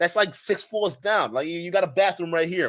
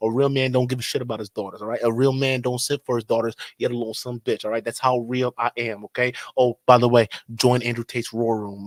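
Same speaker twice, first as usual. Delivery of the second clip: fake smooth country accent, very low; 6 semitones lower than usual. Mocking a man who doesn't simp for his daughters, in a mock smooth country accent. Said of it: "I got this nice, smooth country accent".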